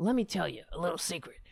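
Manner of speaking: rasping, gravel-filled tone. Retelling a phone call, quoting the caller: Jones's gravelly voice. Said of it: "he said in his voice, his gravelly".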